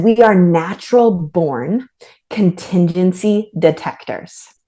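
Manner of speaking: normal talking voice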